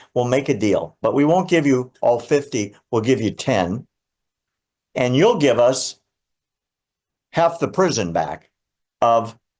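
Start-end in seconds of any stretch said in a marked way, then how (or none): none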